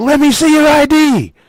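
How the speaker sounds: high, loud, barked yelling.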